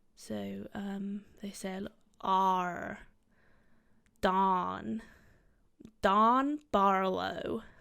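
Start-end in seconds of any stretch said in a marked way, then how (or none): 2.2-7.6 loud, very slow, practiced American accent. Showing the american accent they have been practicing for acting: attempt at american accent. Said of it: "that's my attempt at an American voice".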